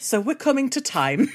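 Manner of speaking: gentle therapist tone. Showing how their therapist wraps up a session, imitating the therapist. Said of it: "I'm mimicking when my therapist is like".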